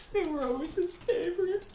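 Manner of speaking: very high, loud, weepy sob-talk. In a roleplay scene, a character who forgot her husband's name speaks, crying. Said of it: "She starts crying again".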